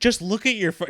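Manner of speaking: angry high voice. Retelling his wife's reaction to the Weather Channel request, imitating her getting mad. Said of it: "She was getting so mad".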